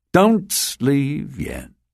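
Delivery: low-key, understated delivery. One of two figures blocking the narrator's exit speaks to him, said quietly. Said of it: "one of them said quietly".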